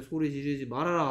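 ordinary delivery

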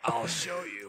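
barely-there, hushed, soft whisper. Narrating a figure emerging from the shadows to speak: whispering as Chuck. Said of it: "just whispers in there".

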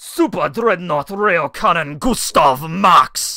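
loose, loud put-on Russian accent. Reading out a card name, the speaker repeats it in a Russian-y accent. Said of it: "but in, like, a Russian-y accent".

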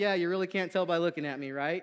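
teasing, tongue-in-cheek, quick joking tone. Speaker retells what they said to a man, retelling own joking remark. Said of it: "kind of jokingly was like".

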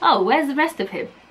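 normal talking voice

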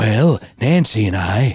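put-on voice of an old politician. Doing an impression after talking about repeated speeches: Ronald Reagan impression. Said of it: "I can finally do my Ronald Reagan impression".

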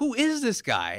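high, slow, gasping, incredulous disbelief.

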